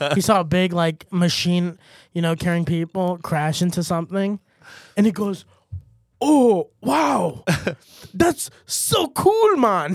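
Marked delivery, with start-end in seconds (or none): 6.2-10.0 put-on slow, swooping, drawled Jamaican accent. Joking around with another speaker, voicing Osama bin Laden with a Jamaican accent. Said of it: "I don't know why he's Jamaican".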